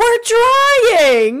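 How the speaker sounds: shrill, high, loud yell with "trying" drawn out. Recapping a haunted apartment scene, retelling Carly's yell. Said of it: "Carly yells back".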